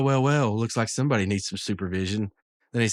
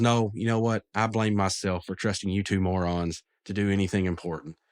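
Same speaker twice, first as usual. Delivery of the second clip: normal talking voice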